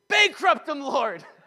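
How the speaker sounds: high, loud cry, yelled out. Speaker recounts standing by a building on the street, retelling a yell on the street. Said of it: "I started yelling on the side of the street".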